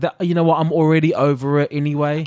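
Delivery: ordinary talk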